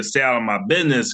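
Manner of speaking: plain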